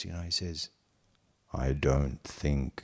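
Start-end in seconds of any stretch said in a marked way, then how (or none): 1.5-2.8 deep, low voice. Recalling asking Nawayabai a question, the speaker gives his reply in Nawayabai's deep voice. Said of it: "In his deep voice".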